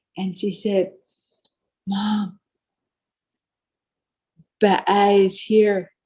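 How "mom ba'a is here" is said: put-on tearful, teary voice. Retelling what the daughter said in the dark ceremony: imitating a tearful voice. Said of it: "She's got tears in her, in her voice".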